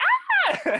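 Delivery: high-pitched, loud yelping scream.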